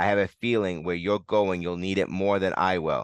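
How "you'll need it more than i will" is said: ordinary delivery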